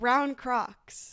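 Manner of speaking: quiet, hushed undertone. Retelling his answer when asked what the race ticket cost: quiet, hushed voice. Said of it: "in a quiet, hushed voice".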